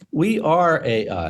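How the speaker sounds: ordinary talk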